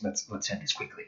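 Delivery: breathy, hushed, very quiet whisper. A game master voices a character who strikes again mid-fight, whispering. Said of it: "he whispers".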